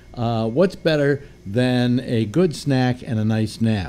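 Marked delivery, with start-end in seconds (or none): none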